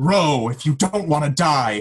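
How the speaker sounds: loud, high-pitched, enraged, furious yell. Recapping a boat scene, acting out what the man yells: retelling a yell. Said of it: "And he just yells".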